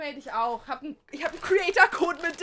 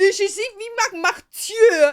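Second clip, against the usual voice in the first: put-on scream, higher and louder; 6 semitones higher, 11 dB louder than usual. Retelling how the delivery guy screamed at them: imitating a delivery guy screaming. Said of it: "the delivery guy was literally screaming at me".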